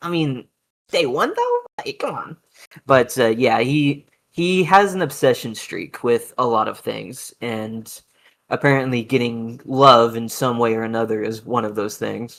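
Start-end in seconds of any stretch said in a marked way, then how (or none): 0.9-1.6 very high, incredulous, disbelieving squeak. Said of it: "And I'm like".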